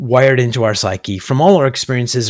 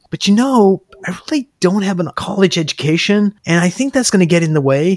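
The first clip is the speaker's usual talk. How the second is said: feeble, small, weak, high-pitched voice; 7 semitones higher than usual. Retelling a client's doubts about lacking a college education: imitating a weak tone of voice. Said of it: "the tone of voice changes to a weak tone of voice".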